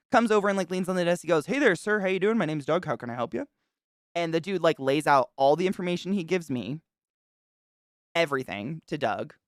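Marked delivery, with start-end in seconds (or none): 1.4-3.4 laid-back, chill, friendly and welcoming. Retelling how Doug came over and greeted a man at the desk: chill Doug impression. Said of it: "very chill".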